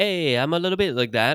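put-on Italian accent. Showing what kind of italian the other speaker means: put-on italian accent. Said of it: "Italian, like".

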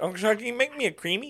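put-on babyish talk, very high pitched. Retelling being drunk and asking an uncle for another drink, talking like a baby. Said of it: "I kept talking like a baby".

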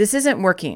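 ordinary talk, nothing marked

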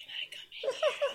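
soft, breathy whispering. Retelling what she said: imitating someone whispering.

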